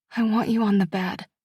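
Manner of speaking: shaky, quiet, trembling, breathy voice. Reading a story, the narrator speaks a line to her partner: shaky, quiet, breathy voice. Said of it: "My voice is shaky, too quiet, too breathy".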